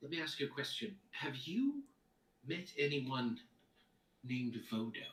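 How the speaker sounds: speaking in a whisper. Asking another character about someone in secret: whispering. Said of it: "Why are we whispering like this?".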